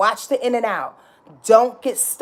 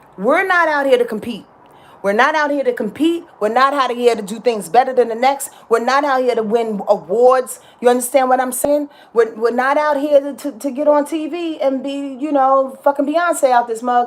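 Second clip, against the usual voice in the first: ordinary delivery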